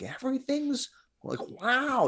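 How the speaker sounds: easy, laid-back, loose tone, very high pitch. Retelling how the guy down the river talked: Owen Wilson easy tone. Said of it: "pure Owen Wilson".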